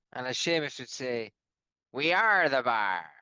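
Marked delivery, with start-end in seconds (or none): 1.9-3.0 bad, horrendous put-on pirate accent. Capping the other speaker's remark with a quote, in a bad pirate-sounding accent. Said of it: "a pirate. Are you a pirate".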